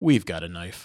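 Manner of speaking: mock AI-style voice. Quoting a line from a film trailer, imitating the trailer's AI voice. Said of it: "And the AI voice goes".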